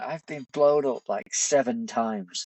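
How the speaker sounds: slow, fed-up, pissed-off griping. Retelling a fellow patrol member's complaint after being blown up: imitating someone pissed off. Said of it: "And he's pissed off".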